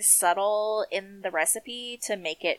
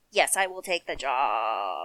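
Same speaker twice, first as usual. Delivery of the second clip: exaggerated, very deep, swooping put-on giant voice; 8 semitones lower than usual. Imagining how he accepted the job offer, the speaker uses a very deep put-on voice. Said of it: "My voice is so deep. I'm an enormous man".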